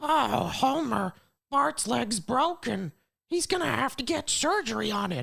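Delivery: raspy, high-pitched cartoon voice. Speaker acting out a Simpsons scene with several voices: Marge Simpson impression. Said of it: "I genuinely do a great Marge impression".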